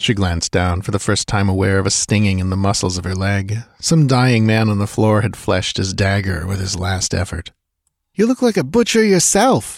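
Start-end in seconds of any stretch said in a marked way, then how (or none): 8.1-9.8 said through a laugh, very high-pitched. Reading a woman's reply to a man in a story, laughing. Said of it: "she laughed".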